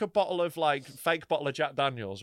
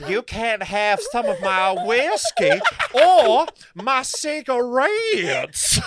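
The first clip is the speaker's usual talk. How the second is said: very loud, very slow fake Southern American accent; 8 semitones higher, 11 dB louder than usual. Retelling someone's attempt at an accent: bad Southern American accent. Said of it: "she tries to do a Southern American accent, and it is the shittest thing I've ever heard".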